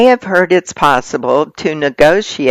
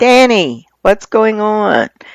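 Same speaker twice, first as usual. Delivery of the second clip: put-on gentle high yell. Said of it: "we're yelling".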